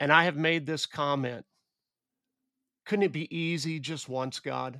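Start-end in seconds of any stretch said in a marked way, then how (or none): none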